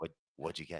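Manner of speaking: very quiet, soft half-whisper. Retelling someone sneaking up from behind at the vending machine: imitating someone half-whispering.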